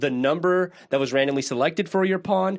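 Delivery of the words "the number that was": plain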